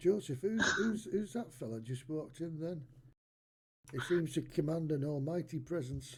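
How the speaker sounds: hushed, half-whispered stage whisper throughout. A player's character asks a companion about a stranger entering the tavern: half-whispering. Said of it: "I'm whispering that, by the way".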